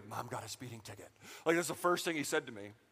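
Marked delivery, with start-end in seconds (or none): 0.1-1.1 very quiet, hushed whisper. Retelling what a son whispered during worship: imitating Joseph whispering. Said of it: "he just whispers in my ear".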